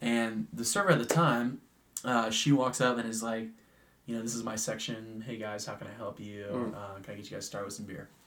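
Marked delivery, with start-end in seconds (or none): 4.1-8.1 very soft, quiet, easygoing, laid-back voice. Telling a restaurant story, the speaker acts out the server greeting the group: imitating a chill server. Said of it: "Very chill".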